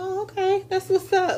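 awkward, high, fake polite tone.

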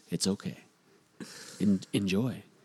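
very low, soft, seductive sultry voice. Reassuring a listener, sultry voice. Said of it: "I'm going to use my sultry voice".

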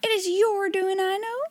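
fierce, accusing, high-pitched outcry. Turning on a girl at a party table, crying out fiercely. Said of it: "she cried".

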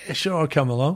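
usual speaking voice

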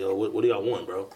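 usual speaking voice

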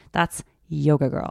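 put-on disgusted tone. Retelling what a girl in a group said about Yoga Girl, mimicking a disgusted tone. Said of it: "she said it with that voice".

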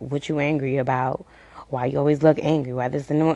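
ordinary delivery

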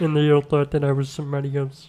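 croaky puppet-like voice. Starting the podcast topic after being told to use the voice: Kermit voice. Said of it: "You gotta stop that voice".

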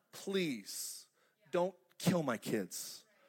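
slow, put-on begging, pleading voice. Picturing a mother begging a murderer: imitating a mother pleading. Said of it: "like a mother pleading for the life of her kids".

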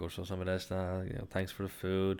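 ordinary talk

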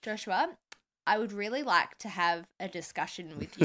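plain

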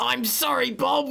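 very high, gravelly, grating whine. Retelling a cartoon scene where Spud apologizes to Bob, gravelly whiny Spud voice. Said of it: "he's like really gravelly and harsh and very also very whiny".

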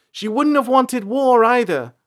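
high-pitched, loud yell. After her father shouts at her, April answers, yelling back. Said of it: "April yelled back".

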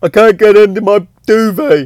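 put-on play-acted whiny baby-like crying. Retelling what she said when she started crying again, imitating baby-like whinging crying. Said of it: "like proper baby-like whinging crying".

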